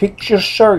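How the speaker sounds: put-on heavy Latin accent. Retelling a woman in Times Square who grabbed you, heavy Latin accent. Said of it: "like with a heavy Latin accent".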